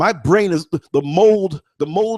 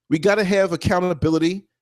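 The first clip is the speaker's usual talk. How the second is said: ordinary talk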